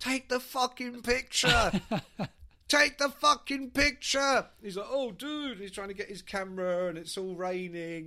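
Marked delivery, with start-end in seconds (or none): 0.0-4.5 shouted at full blast, very loud and high-pitched. Telling a story, acting out how the guy was yelling at him. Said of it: "the guy was yelling at him".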